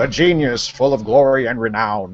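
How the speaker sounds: as smug as possible, arrogant and condescending. Doing Lanny Poffo as The Genius, Lanny Poffo impression, mock-arrogant. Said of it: "trying to sound as arrogant and uh, condescending as I possibly can".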